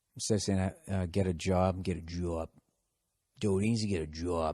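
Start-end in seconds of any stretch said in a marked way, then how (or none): 1.1-4.6 Boston accent, vowel in job sounds like jaw. Speaker shows how his Boston accent came back after a week there, Boston accent. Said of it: "the Boston accent kind of came back".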